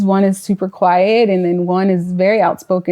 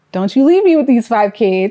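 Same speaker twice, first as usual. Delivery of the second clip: put-on pleading, imploring, begging tone; 4 semitones higher than usual. Retelling how she begged him in the hospital: retelling a plea. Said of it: "And I begged him, I said".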